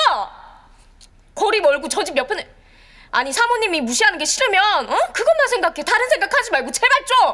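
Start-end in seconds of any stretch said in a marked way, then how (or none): 3.1-7.4 higher-pitched, pressing, exasperated tone. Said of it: "걸핏하면 소리를 빽빽 지르고 난리야".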